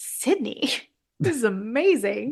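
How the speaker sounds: acted, amazed, awestruck, jaw-dropped exclamation. Retelling first watching a movie scene: imitating own amazed reaction. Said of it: "I think my jaw dropped when I watched it".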